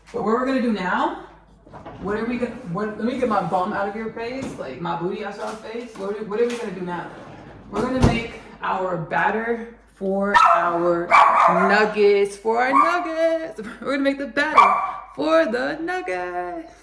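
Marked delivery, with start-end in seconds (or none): 7.7-16.6 put-on high, loud, slow cheesy talk show host voice. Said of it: "that was my Oprah impersonation".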